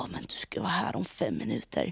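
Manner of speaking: quiet, furious, fed-up tone. Retelling a man's angry phone call while the speaker was on the way in, imitating a furious man. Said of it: "Och han är skitsur".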